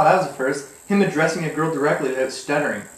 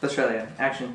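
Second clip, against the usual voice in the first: normal talking voice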